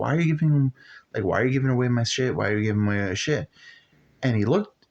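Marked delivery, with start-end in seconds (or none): 0.0-3.5 put-on mad kid's voice, angry and repeated. Retelling complaining as a kid to his dad: imitating own angry younger self. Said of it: "I would always be mad".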